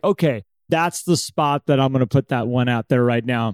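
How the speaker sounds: ordinary talk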